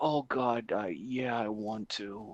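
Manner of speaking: odd, very slow, dragged-out, halting delivery. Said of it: "he says it really fucking weird".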